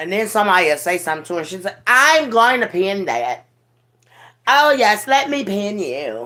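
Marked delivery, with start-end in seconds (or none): 1.9-6.3 put-on high, swooping, drawn-out valley girl drawl. Retelling how she answers someone: imitating Rod's valley girl voice. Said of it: "talking like a daggone valley girl".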